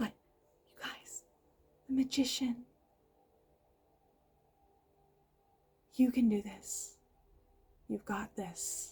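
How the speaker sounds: hushed whisper. Talking to listeners who may be trying to sleep, whispering. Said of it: "And I'm whispering".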